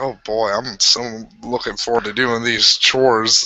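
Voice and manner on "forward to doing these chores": normal talking voice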